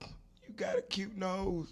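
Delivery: slow, tearful, acted crying voice. Retelling talking to herself in the mirror: retelling own crying words. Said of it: "And I'm crying".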